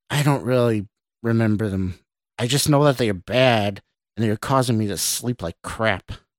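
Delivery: ordinary delivery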